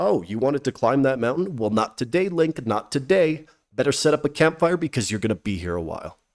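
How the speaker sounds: usual speaking voice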